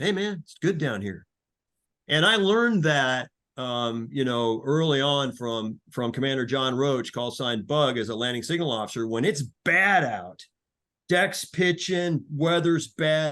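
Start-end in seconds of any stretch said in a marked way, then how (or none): 0.0-1.3 fast, on-air radio disc jockey voice. Speaking to the people listening, in a dj voice. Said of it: "D J voice".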